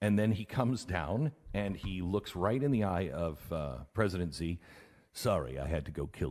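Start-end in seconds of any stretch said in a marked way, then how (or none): 5.1-6.3 put-on deep Russian accent, much lower pitch. Telling a story about Soleimani's killing, quoting someone in a deep-voiced Russian accent. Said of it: "sound like a deep voiced Russian".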